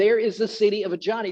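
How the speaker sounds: normal talking voice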